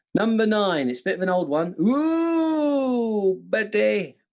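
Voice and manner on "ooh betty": high, big, stretched, drawn-out "ooh". Disguising an old one for the others, saying it as an impression. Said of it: "My impression".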